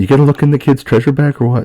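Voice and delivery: hushed whisper. In an acted scene, one character questions another, whispering. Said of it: "let me whisper in your ear".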